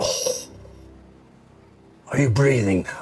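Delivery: deep, watery, ancient voice from the depths. Voicing an entity holding the listeners aloft and shaking them, deep, watery voice. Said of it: "A deep, watery voice speaks as if from the depths of time".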